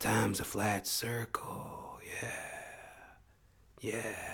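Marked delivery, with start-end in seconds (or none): 0.0-2.0 weak, breathy, very quiet near-whisper. Quoting a line in someone else's voice, then admitting it fell short: not-the-best impersonation. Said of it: "that wasn't the best impersonation".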